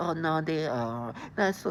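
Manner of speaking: acted, slow, patronizing, condescending talking-down drawl. Mimicking how others talk down to people, imitating a condescending voice. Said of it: "They use these condescending voices".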